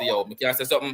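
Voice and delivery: ordinary talk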